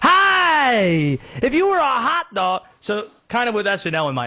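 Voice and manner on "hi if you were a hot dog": "hi" drawn out, very slow and high. Showing how everyone's impression copied Will Ferrell's: Harry Caray impression. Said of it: "when Will Ferrell did the impression".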